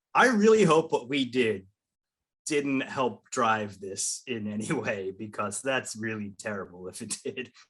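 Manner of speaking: acted grave voice tinged with guilt. Quoting the man from the listener's interview, imitating a somber, guilty tone. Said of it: "he just gets really somber and like almost guilty".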